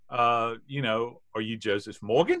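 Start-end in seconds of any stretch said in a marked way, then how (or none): 1.3-2.4 heavy, thick put-on Australian accent laid on thick. Retelling a phone call with a caller from Australia: imitating a thick Australian accent. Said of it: "with a very thick, lovely but thick Australian accent".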